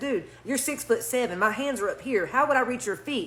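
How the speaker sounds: ordinary talk, nothing marked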